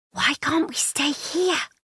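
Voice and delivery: very high-pitched stage whisper. Reading a story where a child asks why they can't stay: stage whisper. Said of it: "says in a stage whisper".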